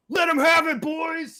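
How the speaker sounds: high-pitched, loud shouting battle yell. Voicing a soldier who yells up to his buddies: yelling a battle order. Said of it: "just yells up".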